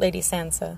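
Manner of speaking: plain reading voice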